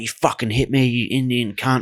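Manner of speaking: play-acted angry, ranting, screaming delivery. Retelling a woman at McDonald's yelling at the manager: imitating someone screaming. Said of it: "started screaming at everyone".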